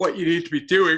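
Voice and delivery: loud speech spoken through a yawn. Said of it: "sorry, yawning here".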